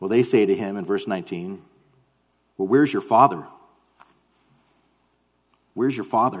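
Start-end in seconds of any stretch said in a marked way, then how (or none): 2.6-6.4 put-on taunting, sarcastic tone. Retelling how the questioners challenged Jesus, imitating a sarcastic question. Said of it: "there's sarcasm, I think, in these guys' voices".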